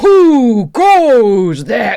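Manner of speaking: screaming, echoing voice. A voice booms out when the player touches the glowing sigil: echoing scream. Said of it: "It screams".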